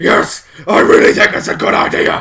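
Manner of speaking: very loud, rough, rasping vigilante voice. Retelling a superhero answering a companion: Batman voice. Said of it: "he still had to put the Batman voice on".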